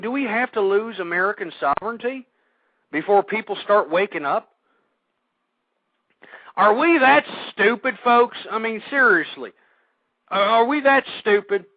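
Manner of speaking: fed-up, frustrated, exasperated rant. Talking to listeners, addressing them as folks, openly frustrated. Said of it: "And you can hear the frustration".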